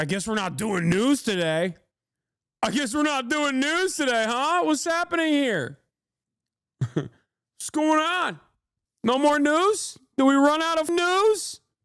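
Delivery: mocking put-on voice.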